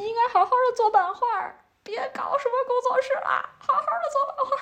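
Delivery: acted-out drunken yelling, pitched very high. Speaker recalls a drunk artist friend sitting beside her at drinks: retelling a drunk friend's shout. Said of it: "对我大喊".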